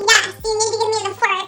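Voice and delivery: put-on angry voice. Retelling a standoff with a girl who refuses to give up a fork, in a mock-mad voice. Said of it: "kind of like a mad voice at this point".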